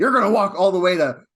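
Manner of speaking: high, loud, panicked, freaked-out yell. Act out a man who is freaking out and yelling at Lilia, imitating someone yelling. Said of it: "he's yelling at Lilia".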